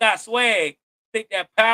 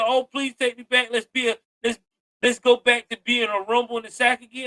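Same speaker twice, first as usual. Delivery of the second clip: ordinary talk, nothing marked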